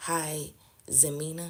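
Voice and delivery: normal talking voice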